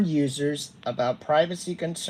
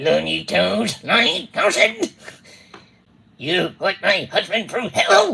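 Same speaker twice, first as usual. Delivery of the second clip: put-on angry woman voice, higher and louder; 5 semitones higher, 7 dB louder than usual. Impersonating the wife of the person addressed: Tammy Peterson impression. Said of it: "I will be impersonating your wife, Tammy".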